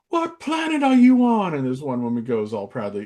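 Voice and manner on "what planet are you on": very loud, very high, shrill, furious yell at full blast. Retelling how Ramsay got pissed off at the women's team: imitating an angry Gordon Ramsay. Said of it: "Ramsay got pissed off at".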